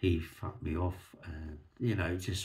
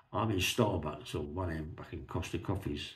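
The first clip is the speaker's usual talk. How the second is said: ordinary talk, nothing marked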